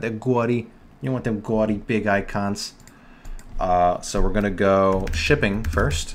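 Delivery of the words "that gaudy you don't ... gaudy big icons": gaudy said with New York accent vowels. Speaker in a design tutorial repeats his slip to show his New York accent. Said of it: "my New York accent came out".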